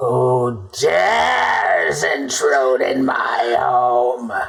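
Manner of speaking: very slow, drawn-out hag voice. Voicing a hag calling down from the chamber above: hag voice. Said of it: "That would be the hag".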